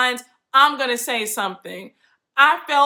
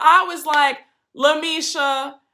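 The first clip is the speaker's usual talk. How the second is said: ordinary delivery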